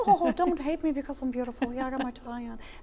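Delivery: goofy, silly, high-pitched voice. Introducing George the dog, speaking for him in a dog voice. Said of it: "That's my only dog voice".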